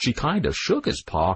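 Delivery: ordinary delivery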